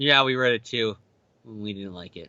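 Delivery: life-hating, miserable sound. Retelling what Thomas said about reading the comic: imitating Thomas sounding like he hated his life. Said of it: "the tone of voice he said it was so much like he hated his life".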